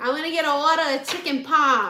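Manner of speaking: put-on Boston accent with dropped R's. Imitating Bostonians heard ordering food: imitating a Boston accent. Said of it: "Bostonians don't say the R's either".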